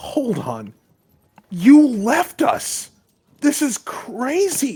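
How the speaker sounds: loud, very high, swooping, rising angry outburst. Narrating a scene, voicing Benjamin as he speaks to the player, angry Benjamin voice. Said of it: "Benjamin gets an angry look on his face".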